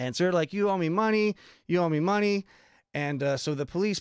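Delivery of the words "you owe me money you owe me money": put-on broken English, insistent high hollering, repeated. Retelling how women came out yelling at a tourist about money: imitating women yelling. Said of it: "start coming and yelling at me like".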